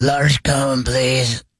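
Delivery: rough, croaky, hoarse croak of a voice. Telling a joke about a customer at an ice cream truck: croaky voice. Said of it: "His voice is all croaky".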